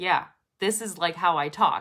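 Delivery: ordinary delivery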